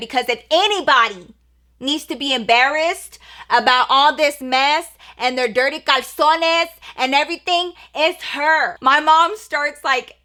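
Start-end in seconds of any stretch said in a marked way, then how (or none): 0.0-8.8 mock voice, raised and speaking up. Retelling how mom answered in a house: imitating mom raising her voice. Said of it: "raising her voice".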